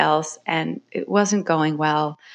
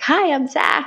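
very high-pitched, overjoyed voice; 11 semitones higher than usual. Retelling how the oud player introduced himself at rehearsal, imitating Zach's joyful greeting. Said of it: "in his very joyful Zach way".

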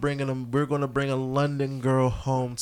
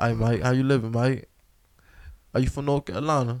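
put-on London accent in a young female voice. Retelling talk with a London girl, the speaker tries the accent: attempted London girl accent. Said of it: "let me see if I can still do my accent".

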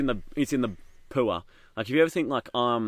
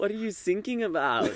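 put-on German accent, pitched up; 8 semitones higher than usual. Telling a joke, voicing the German Coast Guard answering the call: German accent. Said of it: "Coast Guard happens to be German".

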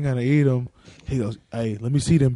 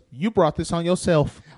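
woman's voice, pitched higher; 4 semitones higher than usual.

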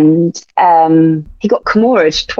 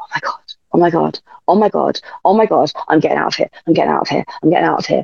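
put-on anxious, looping, rattled-off babble; 4 dB quieter than usual. Retelling being told to leave hospital: imitating own anxious self. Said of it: "I was so anxious".

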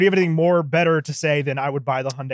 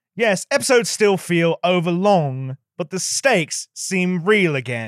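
put-on British news-anchor accent; 3 semitones higher than usual. Reading aloud a line from a Time Magazine review, in a British newscaster voice. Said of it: "That's my British newscaster voice".

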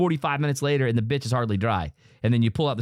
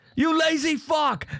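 very high-pitched put-on British accent. Imagining a chef yelling at you about a pot, Gordon Ramsay British accent. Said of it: "in his British accent".

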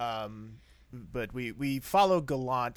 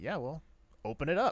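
dry, unbothered, matter-of-fact delivery; 4 semitones higher than usual. Speaker praising an actress's unfazed doctor character: imitating Megan Cole's deadpan. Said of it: "a great little bit of deadpan".

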